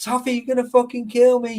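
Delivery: loud, acted-out, protesting scream. Retelling a friend's cry while being grabbed from behind: imitating Volt screaming. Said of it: "He was fucking, like, screaming".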